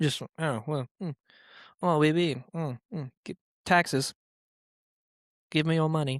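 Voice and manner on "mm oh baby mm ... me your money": bad, exaggerated, put-on French accent. Near the end of an Idiot History episode, imitate how a man talked, in a terrible French accent. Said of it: "That's a terrible French accent".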